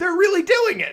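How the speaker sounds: high, loud, amazed shout.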